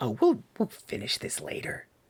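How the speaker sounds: put-on hushed, breathy, whispered old grandmother voice. Voicing an old woman answering a knock at the tent: grandmotherly voice. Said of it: "the grandmotherly voice says".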